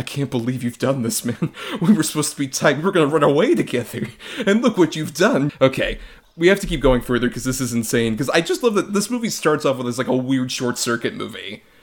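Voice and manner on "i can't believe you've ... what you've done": put-on stung, hurt, betrayed, reproachful voice. Speaker quotes Tom Toomey finding out about Paul, imitating Tom Toomey's betrayed voice. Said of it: "how much betrayal is in his like voice".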